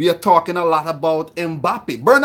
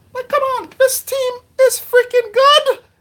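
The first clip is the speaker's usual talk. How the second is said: very high, squeaky little voice; 3 dB louder than usual. Speaker talking about football players gets into a squeaky high-pitched voice. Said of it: "You make me get into my squeaky, high pitched voice".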